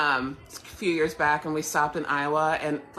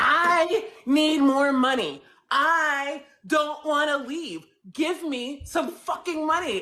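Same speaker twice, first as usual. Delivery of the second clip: mock drunken scream, very high and very slow; 11 semitones higher than usual. Retelling an overheard fight between a wasted newscaster and her husband, imitating Julie Cornell screaming drunk. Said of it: "she's screaming at her husband".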